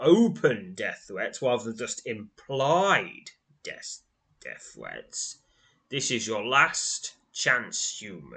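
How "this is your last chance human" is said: snarling, faster. Narrating a game scene, voicing a character who confronts the player, snarling. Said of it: "he snarls".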